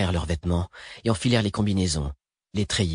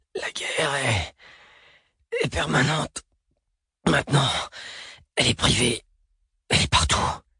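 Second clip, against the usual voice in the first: strained, labored, pitched-up words drawn into a rattle; 4 semitones higher than usual. A narrator reads a man who has just spat blood speaking to his companion, labored and rattling. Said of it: "Élocution difficile, mots prolongés en râle".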